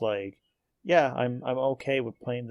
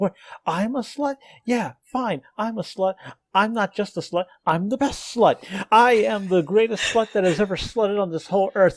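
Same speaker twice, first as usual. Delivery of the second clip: very high-pitched, loud, furious ranting; 10 semitones higher, 8 dB louder than usual. Retelling a comic strip of a woman on the phone: imitating an angry woman. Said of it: "getting really angry".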